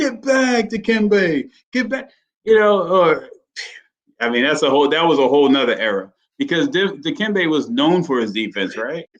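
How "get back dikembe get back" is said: put-on shrill, very high-pitched shout. Recalling how he used to shout at Dikembe Mutombo, imitating someone yelling. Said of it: "like he used to talk to Dikembe Mutombo".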